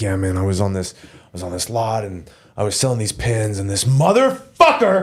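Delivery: put-on low, unhinged, rambling stoner voice. Showing how the wook character goes off on a tangent: acting out an unhinged wook. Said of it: "go off on a tangent and be like".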